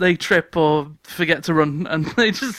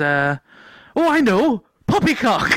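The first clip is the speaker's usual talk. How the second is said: put-on Welsh accent, higher; 5 semitones higher than usual. Retelling how he proposed a code phrase to the group, in a welsh accent. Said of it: "I said poppycock in a Welsh accent".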